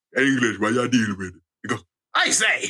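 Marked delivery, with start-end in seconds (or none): 0.1-1.3 put-on ten-year-old child's voice pitched very deep. Retelling what a ten-year-old said behind him, deep-voiced kid impression. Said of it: "a 10-year-old with a deeper voice than you".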